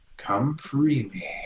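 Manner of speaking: soft, hushed half-whisper. Voicing a voice in a character's head calling to be freed: half-whispering voice. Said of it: "a voice that whispers in Infernal saying".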